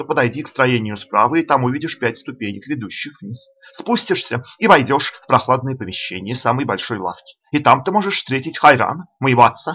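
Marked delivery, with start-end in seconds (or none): none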